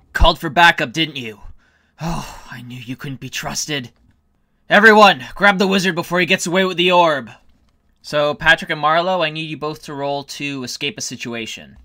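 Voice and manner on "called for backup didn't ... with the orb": words growled through a snarl. Voicing a werewolf leader who feels betrayed: snarling. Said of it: "as she lets out a snarl".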